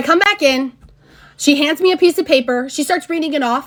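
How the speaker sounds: ordinary delivery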